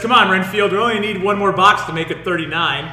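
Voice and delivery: ordinary talk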